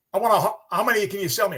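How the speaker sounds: put-on best-effort Aussie accent. Retelling a customer's visit, imitating John, Australian accent. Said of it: "I'll try to do my best Australian".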